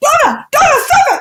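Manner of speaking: shrill telling-off mum voice. Recalling her childhood, she imitates her mother telling her off, imitating her scolding mother. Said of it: "imitating my mother".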